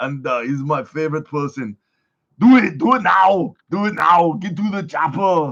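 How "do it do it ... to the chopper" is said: put-on booming loud voice with half Australian accent. Retelling someone's story of meeting Arnold Schwarzenegger, speaker does an Arnold Schwarzenegger impression. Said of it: "A little bit more like the croc- Crocodile Dundee".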